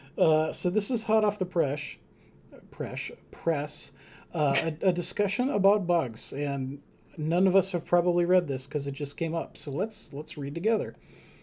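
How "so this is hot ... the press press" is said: ordinary delivery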